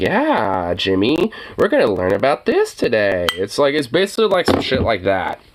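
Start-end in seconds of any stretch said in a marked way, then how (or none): 0.0-3.3 yeah drawn out, condescending tone. Mocking how a commentator talks to his audience: Tucker Carlson baby talk. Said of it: "talks like".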